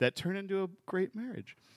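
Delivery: voice goes up. Speaker finishing a story about his relationship, voice going up higher. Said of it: "Why did your voice go up when you said that?".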